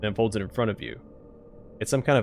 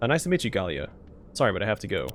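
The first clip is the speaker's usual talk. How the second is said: normal talking voice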